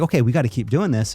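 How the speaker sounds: usual speaking voice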